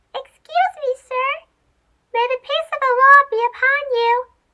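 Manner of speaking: small squeaky voice. Reading a story aloud, a small mouse calls up: tiny squeaky voice. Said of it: "a tiny, squeaky voice from below".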